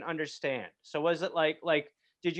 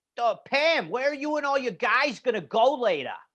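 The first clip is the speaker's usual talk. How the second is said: chatty, raised-pitch put-on Boston accent; 6 semitones higher, 5 dB louder than usual. Imitating someone asking pam about plans later: imitating a boston accent. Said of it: "the Boston accent is also kind of gross".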